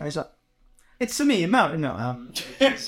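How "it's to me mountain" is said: put-on London cockney accent. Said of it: "he's a Cockney".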